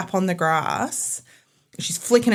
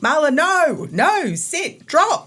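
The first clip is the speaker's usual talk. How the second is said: play-acted yelling, high-pitched; 9 semitones higher, 3 dB louder than usual. Retelling shouting commands at the dog during a snake incident, retelling yelling at a dog. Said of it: "I'm yelling at this point".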